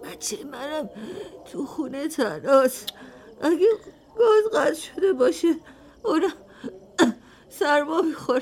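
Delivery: tearful weeping. A woman who came alone, told not to cry, answers about her child, crying. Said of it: "گریه نکن،".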